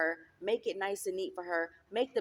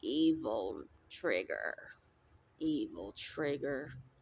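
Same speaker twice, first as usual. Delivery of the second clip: put-on low, slow, haggard older woman's voice; 6 semitones lower, 4 dB quieter than usual. Retelling a voice heard in the spirit: imitating a haggard older woman's voice.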